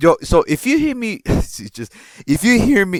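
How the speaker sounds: cracking voice. Speaker warns listeners they may hear it after screaming two days earlier: voice cracking. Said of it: "this fucking voice crack".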